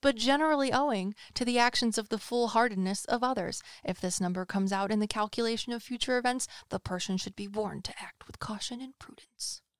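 broadcast announcer reading, like a radio announcer. Reading a text about numbers and future events aloud, the speaker uses an announcer voice. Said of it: "Do you like my announcer voice?".

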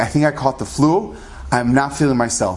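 ordinary talk

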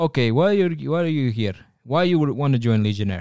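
put-on Russian-accented voice. Retelling a legionnaire questioning the speaker, in a put-on russian accent. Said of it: "I am giving a Russian accent".

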